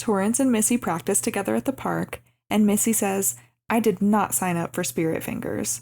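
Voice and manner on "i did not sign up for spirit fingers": ordinary talk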